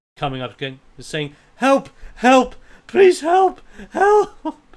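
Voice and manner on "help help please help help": put-on very high, very loud, pleading distressed little girl. Narrating a scene, the speaker voices a little girl running up in pure distress. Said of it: "out of out of like just pure distress".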